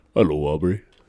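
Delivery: very deep, super low, dropped-down voice. Speaker imitating a strange man who was a good worker greeting Aubrey, super low voice. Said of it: "a super low voice".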